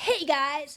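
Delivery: put-on, cartoonish talking fox voice. Voicing the fox on a face filter: put-on fox voice. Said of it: "doesn't it seem like he talks like this?".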